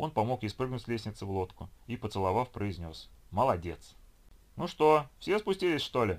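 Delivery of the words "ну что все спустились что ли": loud, high-pitched shouted call. A captain calls down to the others in the boat, shouted. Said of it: "на всякий случай крикнул им Гена".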